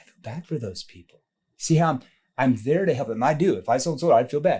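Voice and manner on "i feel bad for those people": sympathetic, concerned, caring, worried tone. Showing how to express sympathy for people: concerned tone. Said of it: "I say that in a concerned tone, like".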